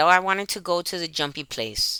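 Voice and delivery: ordinary talk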